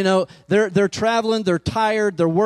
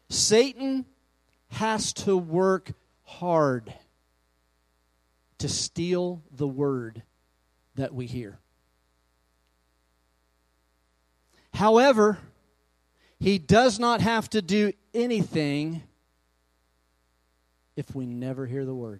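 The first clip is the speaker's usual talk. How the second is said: very slow, soft, deliberate, word by word; 3 semitones lower, 5 dB quieter than usual. Sharing a revelation about God's word with listeners, very slow. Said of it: "I'm going to say it slowly".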